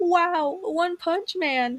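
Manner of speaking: put-on gushing fan, overexcited, high, very slowly drawn out. Quoting a fan's sudden exclamation, imitating an overly excited fan. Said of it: "An overly excited fan suddenly exclaims, ... That's exactly how she sounded".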